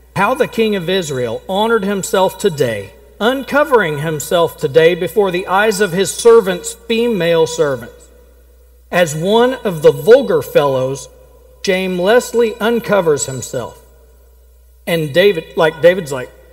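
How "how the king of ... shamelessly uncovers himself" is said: ordinary talk, nothing marked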